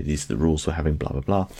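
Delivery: normal talking voice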